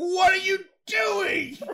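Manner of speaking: very high, shrill, loud yell. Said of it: "I shouted that out loud".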